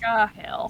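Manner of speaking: muttered quietly under the breath. Voicing Blake reacting to going back: muttered under her breath. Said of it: "Under her breath".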